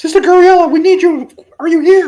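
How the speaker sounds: high, loud screaming call. In a game, knocking and calling for Sister Gabriella: screaming. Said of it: "I'm screaming as I knock".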